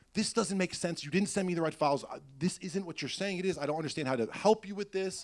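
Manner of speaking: exasperated, screaming rant. Recalling a phone call with Bowen, the speaker acts out their past self: retelling own screaming. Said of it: "I'm screaming at Bowen on the phone".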